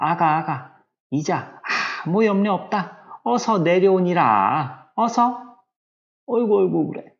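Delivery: put-on fawning, sweet, wheedling coaxing voice. Acting out a mother coaxing her baby down, imitating a wheedling, coaxing mother. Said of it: "이 엄마의 상당히 간살스러운 목소리로 얘기하는 것만 같은".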